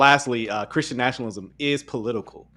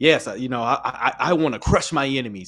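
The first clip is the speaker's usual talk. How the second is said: gleeful, relishing, savoring delivery. Retelling what Joel says in a clip: imitating gleeful Joel. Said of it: "kinda gleeful about it".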